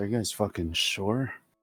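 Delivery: half-whispered, under the breath. Voicing a character who half-whispers a question to the group: half-whisper. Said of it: "fires a whisper to you guys".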